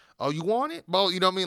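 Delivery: heavily slangy street-talk voice. Imitating how Ricochet talked in NXT: imitating Ricochet talking slang. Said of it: "with slang and stuff in N X T".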